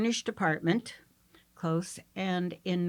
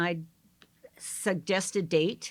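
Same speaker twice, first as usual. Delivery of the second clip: plain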